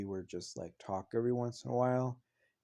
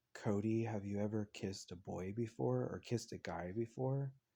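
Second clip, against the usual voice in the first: hushed, quiet voice; 4 dB quieter than usual. Recalling a guy beside them asking a question, retelling a quiet question. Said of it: "really quietly".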